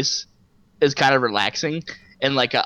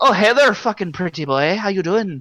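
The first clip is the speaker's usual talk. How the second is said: tipsy, boozy-sounding Irish lilt; 5 semitones higher than usual. Retelling meeting an irish woman, imitating her drunk-sounding irish accent. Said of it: "And her accent".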